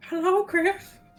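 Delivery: put-on high-pitched elderly man voice. After the group names the old man from Family Guy, Herbert from Family Guy voice. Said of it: "sounded more like the old guy".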